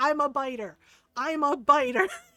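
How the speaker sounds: loud, very slow, drawn-out yell. Retelling a stranger touching her pregnant belly: retelling a yell. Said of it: "when I yelled".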